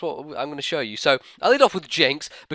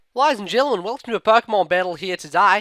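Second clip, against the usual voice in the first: put-on Australian accent, pitched up, from first word; 5 semitones higher than usual. Welcoming ladies and gentlemen to a Pokemon battle, in an Australian accent. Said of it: "I'm speaking in Australian accent".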